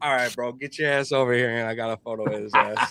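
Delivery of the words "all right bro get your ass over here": mock folksy country uncle voice. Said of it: "with his fucking country unk voice".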